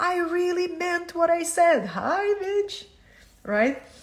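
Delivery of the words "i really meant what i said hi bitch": very high, very loud outburst. Acting out the higher self answering someone who pretends not to hear: voicing the higher self. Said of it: "The higher self".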